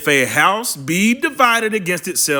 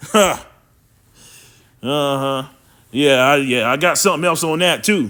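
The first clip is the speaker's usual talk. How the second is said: plain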